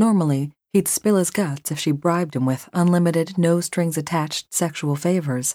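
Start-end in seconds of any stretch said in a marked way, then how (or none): none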